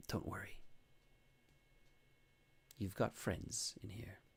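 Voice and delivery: very quiet, hushed, reassuring whisper. Voicing a guard leaning in to a prisoner: whispering guard. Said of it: "you hear her whisper".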